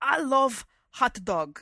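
exaggerated, overdone Italian accent. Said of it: "sounds totally like somebody imitating a bad Italian accent".

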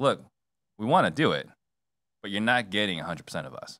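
ordinary talk

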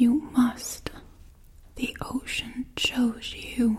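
frail, weak, feeble voice. Narrator voicing Grandma, sick in bed, speaking to Moana in a weak voice. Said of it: "Grandma said in a weak voice".

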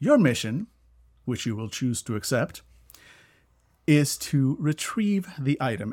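mechanical, robotic computer announcer voice. Describing a game, imitating the game's AI voice. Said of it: "the AI voice goes like".

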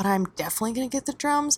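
speaking quietly and softly. Admitting a plan the girlfriend shouldn't hear, speaking quietly. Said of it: "quietly 'cause I don't want my girlfriend to hear".

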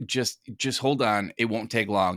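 plain

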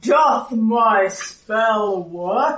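huge, deep, booming voice of a great beast. Describing a game scene, a character casts an untried spell in a deep, booming voice. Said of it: "this kind of deep, booming voice says".

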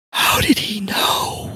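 hushed, slow, drawn-out, terrified whisper. Narrator voices the dead man's widow addressing the player, whispered. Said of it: "You see the widow of the dead man, Mrs. Fayette".

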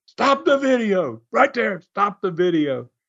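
high, half-voiced, mild yell. Retelling how John screamed to stop a wrestling video, imitating John screaming. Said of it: "And John screamed".

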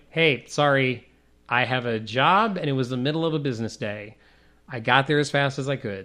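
ordinary talk, nothing marked

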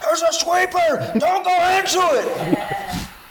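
very high, slow screaming. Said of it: "he's screaming at me".

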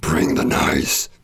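botched, rough, failed death metal growl. Announcing the tour name, trying an attempted death metal voice. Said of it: "trying to say it in kind of a death metal voice".

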